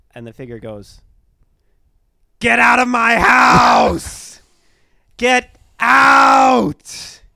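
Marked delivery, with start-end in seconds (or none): 2.3-7.1 loud, high-pitched ghostly scream. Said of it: "still screaming".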